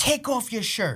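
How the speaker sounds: cross, high-pitched, angry delivery. Retelling what the teacher said after milk spilled: imitating an angry teacher. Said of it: "the teacher got angry and was like".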